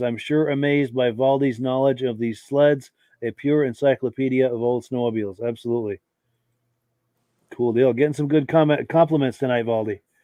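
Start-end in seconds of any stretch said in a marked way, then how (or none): none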